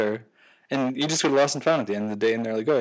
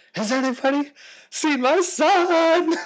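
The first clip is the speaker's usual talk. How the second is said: put-on shrill horrified shriek, very high, very slow; 5 dB louder than usual. Retelling a woman in a crowd crying out: imitating a shrill horrified scream.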